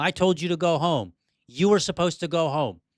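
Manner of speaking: mock firm, mild scolding, half shouted. Retelling dragging Terry off church property: imitating own screaming. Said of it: "I'm screaming at him, yelling him".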